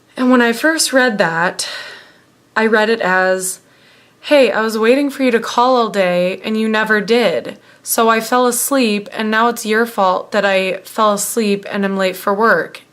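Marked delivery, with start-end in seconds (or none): none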